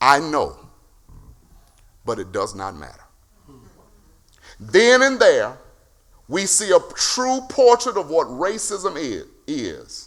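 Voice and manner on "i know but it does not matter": put-on chilly, unmoved, icy tone. Retelling a movie scene where the Queen answers: imitating a cold reply. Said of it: "To which coldly she replies".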